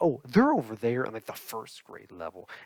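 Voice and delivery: acted condescension, loud with swooping pitch. Retelling a librarian's reply about where the books are: imitating a condescending tone. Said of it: "she gave me a condescending look and tone".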